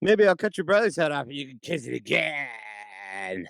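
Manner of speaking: haughty, arrogant taunting tone. Retelling a scene, quoting Joffrey: imitating arrogant Joffrey. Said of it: "he's such an arrogant fuck".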